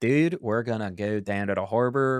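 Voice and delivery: Maryland regional accent. Explaining the Maryland accent to friends, demonstrating a Maryland accent. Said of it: "Maryland accent".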